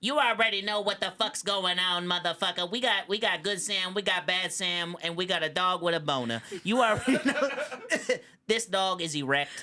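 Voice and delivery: high talking-cat voice. Trying again, the speaker does a better cat impression, cat impression voice. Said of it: "I'll do a better cat impression now".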